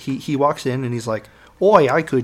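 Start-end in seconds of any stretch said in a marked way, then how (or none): 1.6-2.2 put-on Australian accent, higher. Retelling a scene where the evil hunter walks in: australian accent. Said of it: "I'm not gonna do the accent".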